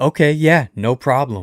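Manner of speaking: acted, snippy tone with a little attitude. Retelling a stranger's reply after being asked to move her feet, imitating a reply with attitude. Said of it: "with a little attitude".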